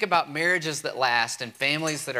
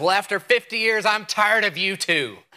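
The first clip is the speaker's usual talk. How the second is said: acted-out, angry, raised, high-pitched voice; 6 semitones higher, 5 dB louder than usual. Telling a story about a long marriage, the speaker acts out the woman's reply: imitating a mad wife. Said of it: "She's mad".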